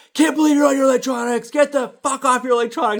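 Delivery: put-on high-pitched, shrill, furious ranting scream. A parent reenacts screaming at their kid, retelling screaming at kid. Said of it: "I just start screaming even more".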